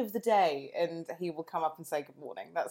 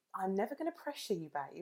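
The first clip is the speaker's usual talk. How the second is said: mock-gentle reassuring voice, quieter; 2 semitones higher, 8 dB quieter than usual. Retelling how Tim said it gently this morning: imitating Tim's gentle, loving tone. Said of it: "the way you said it was".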